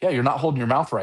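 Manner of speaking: dry, flat, expressionless deadpan delivery. Retelling an older angler's dry reply to the complaint: imitating a deadpan remark. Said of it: "just this deadpan look".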